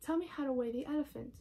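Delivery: ordinary delivery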